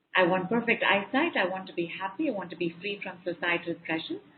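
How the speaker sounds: normal talking voice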